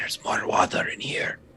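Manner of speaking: put-on whisper-yell. Telling the party what the character says at a door: Jack Bauer whisper yell. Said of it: "the Jack Bauer, like, whisper yell".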